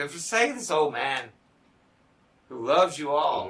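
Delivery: play-acted tearful crying, voice catching, choked up. Retelling an old man's plea to put aside grievances, imitating him choking up, crying. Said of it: "he says it like choking up, crying".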